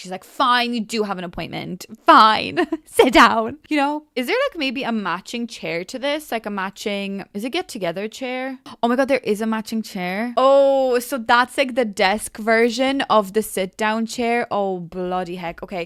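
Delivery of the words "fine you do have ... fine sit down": play-acted, loud, fed-up, exasperated and grudging delivery. Retelling a bank lady who finds the customer's appointment, mock-exasperated. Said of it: "she rolls her eyes".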